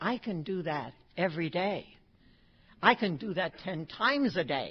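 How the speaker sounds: ordinary delivery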